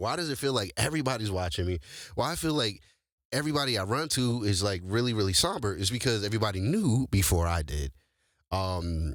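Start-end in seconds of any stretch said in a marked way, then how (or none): none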